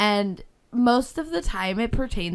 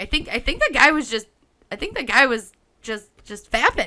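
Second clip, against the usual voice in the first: normal talking voice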